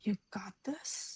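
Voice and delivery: hushed, soft whisper. Voicing a character who speaks quietly to a creature: whispering. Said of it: "Michael whispers to Fuzai".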